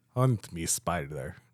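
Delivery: put-on Russian accent, low voice. Told by another speaker to redo a quoted line, attempting a russian accent. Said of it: "you have to do it with a Russian accent".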